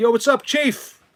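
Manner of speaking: put-on shrill, very loud, very high Long Island accent. Showing how Long Island people talk, in a loud Long Island accent. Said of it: "they all talk like this, and they're all loud".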